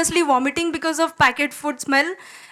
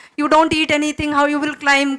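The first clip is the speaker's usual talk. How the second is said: ordinary talk, nothing marked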